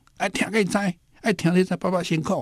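high-pitched mock scolding yell.

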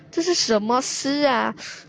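ordinary delivery

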